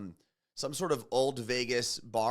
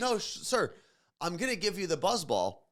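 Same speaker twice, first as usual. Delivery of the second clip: put-on firm, raised, swooping, insistent voice; 7 semitones higher than usual. Retelling what a woman on the flight said to him, retelling a raised voice. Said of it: "raising her voice to me now".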